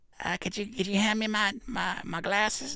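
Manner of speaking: put-on very high-pitched elderly person voice. Comparing kids and elderly folks, the speaker puts on an elderly person voice. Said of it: "That's the same voice".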